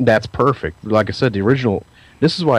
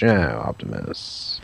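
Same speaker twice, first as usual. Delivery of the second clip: hammy cartoon villain voice, lower and quieter; 10 semitones lower, 6 dB quieter than usual. Mocking the old Megatron voice: mustache-twisting cartoon villain voice. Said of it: "a guy twisting his mustache".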